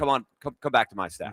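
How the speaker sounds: plain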